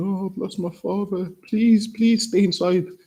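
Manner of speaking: mock tearful, pleading voice broken by sobs. Retelling what a man said crying on Instagram, imitating someone crying. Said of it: "he was crying, saying".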